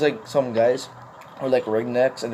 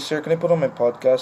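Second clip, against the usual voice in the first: normal talking voice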